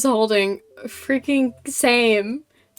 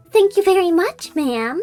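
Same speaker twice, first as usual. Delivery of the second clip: put-on high, direct anime-girl delivery; 6 semitones higher than usual. Showing a voice off to the audience, doing the April May voice. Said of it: "my lackluster anime girl voice".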